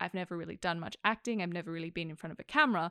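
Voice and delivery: ordinary talk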